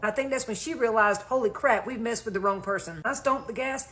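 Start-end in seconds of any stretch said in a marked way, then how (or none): none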